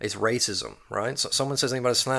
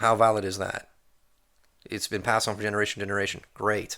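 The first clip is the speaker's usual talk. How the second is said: ordinary talk, nothing marked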